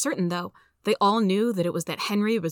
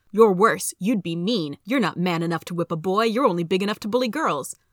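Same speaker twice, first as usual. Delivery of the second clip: plain reading voice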